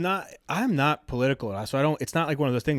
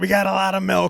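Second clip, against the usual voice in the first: rough, creaky, loud, raised-pitch put-on delivery; 6 semitones higher, 6 dB louder than usual. Retelling a video of a man whose remarks he finds funny: imitating the man quoted. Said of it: "He goes".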